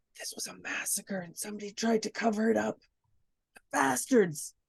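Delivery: quiet whispered aside. Speaking in character to a companion about a massacre: whispering. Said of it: "I'm gonna whisper to".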